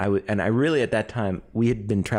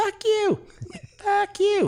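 put-on child yell, much higher and slower. Speaker retells a kid yelling at an older man, imitating a kid yelling. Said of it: "Like that tone".

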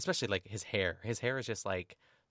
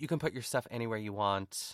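acted, mock-rude tone. Recapping an episode, acting out one cast member's reply to another: mock-rude. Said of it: "Jessica very rudely says".

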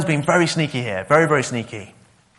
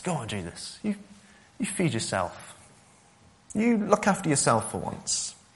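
put-on soft, sly voice with a subtly sinister undertone; 9 dB quieter than usual. Retelling the devil sidling up to Jesus, in a subtle, sinister devil voice. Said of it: "the subtle, sinister undertone in the devil's words".

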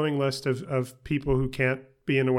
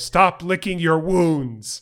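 all-out yell, loud and high; 5 semitones higher, 6 dB louder than usual. Speaker quoting a character's line, imitating Bryan Cranston yelling. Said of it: "and in particular when he yells".

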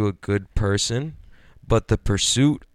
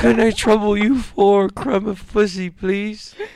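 very high, loud, pitiful urchin's pleading voice; 12 semitones higher, 5 dB louder than usual. Begging again as the ragged beggar: Oliver Twist style begging. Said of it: "That's some Oliver Twist shit right there".

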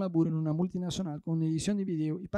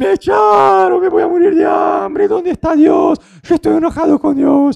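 put-on desperate panic, much higher, louder; 10 semitones higher, 16 dB louder than usual. Speaker acting out a typical believer in hard times, imitating desperate panic. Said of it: "el creyente muchas veces ... se desespera".

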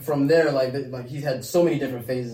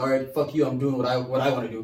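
ordinary delivery

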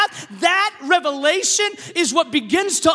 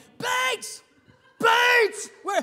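imitated yelling, higher pitch; 6 semitones higher, 4 dB quieter than usual. Retelling a coach calling him into the game: imitating coach yelling. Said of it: "I hear my coach start yelling".

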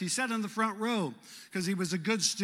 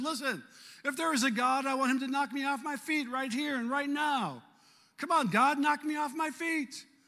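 high, bold, brash, taunting, mocking; 7 semitones higher than usual. Speaker retells what a man said while standing there; retelling a bold mocking challenge. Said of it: "almost mockingly".

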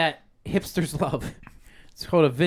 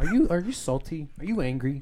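put-on drug commercial announcer voice. Playing a drug commercial about a typewriter: mock drug commercial voice. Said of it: "Sounds like a, a commercial for, like, a drug".

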